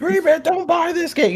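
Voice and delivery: mock emphatic, urgent, very high-pitched. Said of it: "you coulda went a little bit harder".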